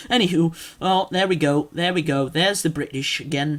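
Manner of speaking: ordinary talk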